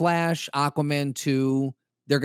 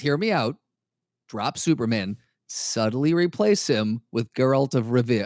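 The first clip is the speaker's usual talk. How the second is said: normal talking voice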